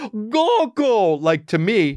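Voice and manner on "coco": put-on shrill, very high, wailing crying child voice. Retelling how he screamed into the Apple remote, imitating a child crying.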